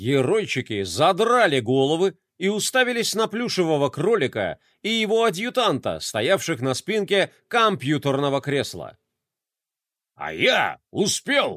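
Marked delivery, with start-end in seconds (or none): 10.2-11.6 triumphant, proclaiming, crowing in victory. The toy general, his craft crashing onto the table, proclaims: triumphant proclamation. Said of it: "торжествующе провозгласил генерал".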